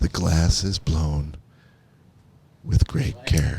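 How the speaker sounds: calm, slow, low, measured documentary narration. Describing a show about glass blowing, imitating its calm, slow narrator. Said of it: "narrates it in a very sort of a calm, slow voice".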